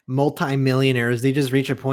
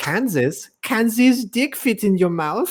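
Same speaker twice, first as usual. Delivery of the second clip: put-on thick German accent, pitched up; 9 semitones higher than usual. Imagining a German guy trying to trick his friend: thick German accent. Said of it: "German dude with a very thick accent".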